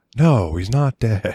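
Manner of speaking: slow, unmoved delivery showing nothing. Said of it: "no change in tone".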